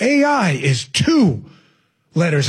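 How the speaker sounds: very slow, words spaced out, straining for weight. The speaker repeats a quoted phrase a second time, said very slowly. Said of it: "If I say it slow".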